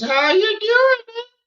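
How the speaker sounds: very high, small character voice. Joking while watching a video, voicing a talking dreadlock. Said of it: "that one dreadlock was".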